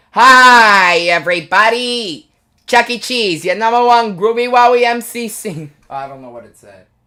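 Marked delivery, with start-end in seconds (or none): 0.2-5.7 loud, very slow cartoon mouse voice, hi stretched out. Showing off a voice-actor bit, starting with the Chuck E. Cheese voice. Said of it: "I do a um Chuck E. Cheese voice actor thing".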